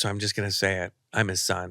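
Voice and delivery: ordinary talk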